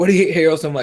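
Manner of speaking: ordinary talk, nothing marked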